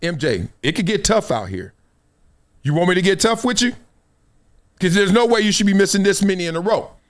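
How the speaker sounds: plain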